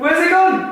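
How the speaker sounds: high, frantic, terrified, panicked yelps. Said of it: "This is terrifying".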